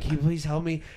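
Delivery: put-on out-of-breath voice, pleading tone. Retelling asking strangers for help during a panic attack: imitating being out of breath. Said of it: "so out of breath".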